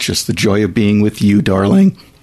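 swooping, heavily sarcastic tone. Answering a question about the joys of working together: sounding sarcastic. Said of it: "even though he sounded very sarcastic".

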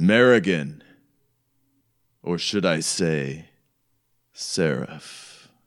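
sonorous, resonant and warm. Telling a story, a man addresses someone by a new name, sonorous, warm voice. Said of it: "his voice is all like sonorous and like warm".

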